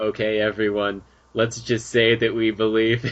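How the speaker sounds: mechanical, robot-like delivery. Speaker retelling what Mimi told everyone, imitating Mimi's robotic voice. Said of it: "she's talking in this robotic voice".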